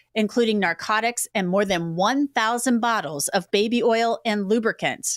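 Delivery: normal talking voice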